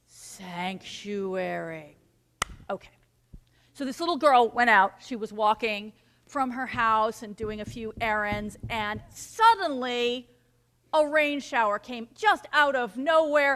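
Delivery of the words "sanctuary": calm and peaceful, lower and quieter. Showing listeners how to repeat a word: peaceful, calm way. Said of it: "Can you say that with me?".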